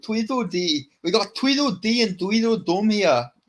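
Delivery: put-on Scottish accent. Retelling what a school teacher used to say: imitating a Scottish teacher. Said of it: "He'd say that".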